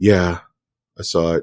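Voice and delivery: mock sad-sounding voice. Retelling a moviegoer's answer on an escalator: imitating someone sounding sad. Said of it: "why you sound so sad".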